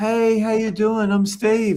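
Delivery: very high, camp, effeminate-sounding voice. Retelling how a man approached a female coach, imitating Steve's Michael-Jackson-like voice.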